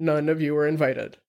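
plain reading voice

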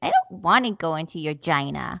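put-on cute, squeaky, chipmunk-like child voice. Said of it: "her voice is so cute, guys. It's like a chipmunk".

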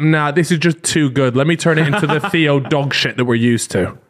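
ordinary delivery

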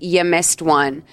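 acted nasty, snide, snotty, rude tone. Retelling a plot scene where a character says a line: imitating a rude remark. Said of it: "in a really shitty way".

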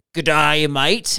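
put-on Australian accent. Recalling friends in Australia asking for an accent, doing an Australian accent. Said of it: "do an Australian accent".

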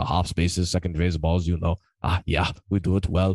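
put-on German accent. Hearing someone say his usual phrases in his voice: imitated German accent. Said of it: "I can just hear him saying that in his German voice".

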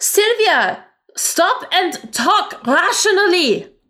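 very high yelled voice. Speaker voices a woman answering Sylvia's attack; yelling back. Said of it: "she just yells back like".

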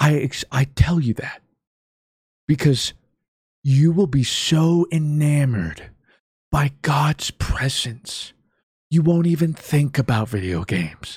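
put-on stage whisper. Retelling a video of a woman pointing to scripture: imitating a loud youth-pastor whisper. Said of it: "loudly whispering to convey her message".

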